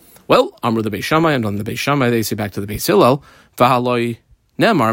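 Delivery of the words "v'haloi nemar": usual speaking voice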